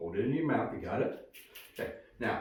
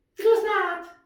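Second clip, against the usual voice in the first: very high, loud, squeaky little puppet voice; 5 dB louder than usual. Arguing back after being called a puppet: Lambie puppet voice. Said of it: "And my voice is your voice".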